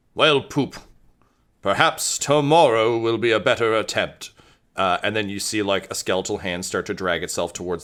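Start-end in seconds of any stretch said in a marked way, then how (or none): 0.2-4.3 talking skeleton character voice. Narrating a scene where a fallen skeleton's skull rolls aside and speaks: talking skull voice. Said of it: "the skull kind of rolls to the side and says".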